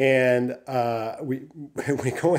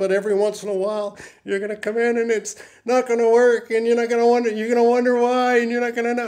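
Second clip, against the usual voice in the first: voice rising steadily, very high and getting louder; 10 semitones higher, 5 dB louder than usual. Quoting a man giving the speaker information, retelling a voice rising up. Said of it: "his voice starts going up".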